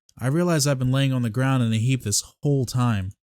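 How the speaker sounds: ordinary delivery, nothing marked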